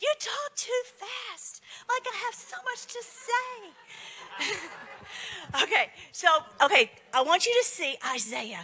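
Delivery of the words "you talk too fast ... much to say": high, slow, soft scolding voice. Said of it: "My mom's always like".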